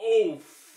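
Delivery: very high, very loud, shrill, cut-off shouted outburst. Retelling what a cinema-goer blurted out: imitating someone shouting out. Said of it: "he just had to shout out".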